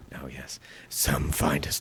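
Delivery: deep gravelly heroic voice. Asked to do a Batman voice, the speaker performs it: Batman voice. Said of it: "Do your Batman voice".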